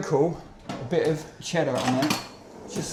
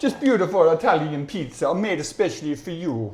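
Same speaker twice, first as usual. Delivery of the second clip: put-on Italian accent; 4 dB louder than usual. Answering a request to do an Italian accent: put-on Italian accent. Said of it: "if one of you guys can do an Italian accent".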